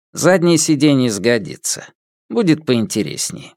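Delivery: ordinary delivery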